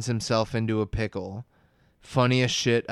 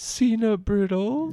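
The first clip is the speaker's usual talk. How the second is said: put-on, very high, tearful sobbing cartoon voice; 11 semitones higher than usual. Retelling a cartoon scene where Patrick cries: imitating Patrick crying. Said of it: "who's crying now, and he just goes".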